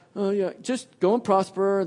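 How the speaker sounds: put-on heavy sarcasm, mocking tone. Acting out how someone might have answered the king, in a mock-sarcastic tone. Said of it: "Perhaps Micaiah was speaking this with a very sarcastic tone".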